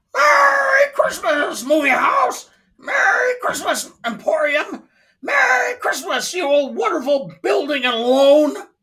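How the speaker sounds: very high-pitched puppet-like voice. Performing George Bailey's lines, George Bailey in a Muppet-like voice. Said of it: "You sounded like a Muppet".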